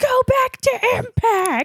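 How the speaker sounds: put-on angry, furious, very high shrill yell. Recounting what a crowd member yelled during a wrestling match, imitating an angry crowd yell. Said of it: "Just full of anger and vitriol".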